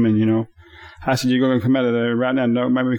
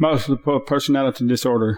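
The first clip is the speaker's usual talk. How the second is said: usual speaking voice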